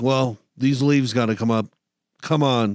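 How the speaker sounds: normal talking voice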